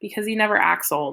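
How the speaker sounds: ordinary delivery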